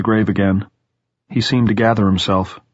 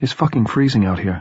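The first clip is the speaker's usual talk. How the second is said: ordinary delivery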